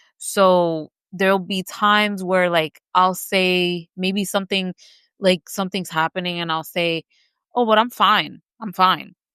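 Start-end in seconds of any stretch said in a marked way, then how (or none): 7.6-9.1 unconvincing "fine," clearly not fine. Retelling how one sometimes says they are fine: imitating an unconvincing "i'm fine". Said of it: "it doesn't sound like I'm actually fine".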